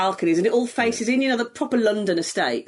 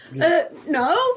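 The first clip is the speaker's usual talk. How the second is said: put-on innocent tone, much higher pitch; 7 semitones higher than usual. Retelling how Jez answered a woman at the till, Jez playing innocent. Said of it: "innocent face".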